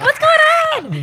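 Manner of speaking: put-on tipsy, high-pitched, swooping drunk voice. Retelling greeting the boss at work while drunk, imitating own drunk high voice. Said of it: "because my voice goes up three octaves".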